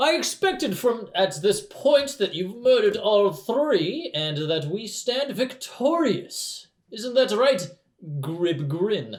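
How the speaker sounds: bellowing troll voice. Voicing the big troll speaking to a kneeling visitor, bellowing troll voice as Lunar. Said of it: "coming out of the big troll is a bellowing voice".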